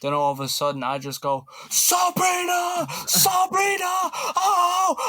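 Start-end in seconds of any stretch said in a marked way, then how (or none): 1.7-5.0 put-on scream, higher and louder. Retelling watching a teammate's shots from a sister's view: imitating own screaming. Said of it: "I pretty much screamed her name".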